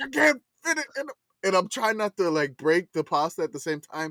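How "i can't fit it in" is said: put-on, very high, angry yet delicate frustrated grumbling. Retelling stuffing ricotta into pasta over the holidays, imitating frustrated cussing. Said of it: "I'm cussing as I'm trying to stuff".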